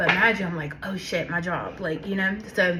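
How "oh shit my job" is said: usual speaking voice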